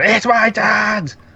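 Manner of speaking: mock piercing, very high-pitched, shrill shout. Retelling a scene where Louise yells at a cop: imitating Louise yelling. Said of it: "she just turns around and yells".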